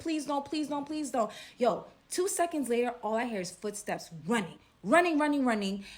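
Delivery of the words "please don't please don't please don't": put-on crying and begging, high and tearful. Retelling a girl begging while crying, imitating crying pleading. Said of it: "I'm just hearing her crying, crying, saying".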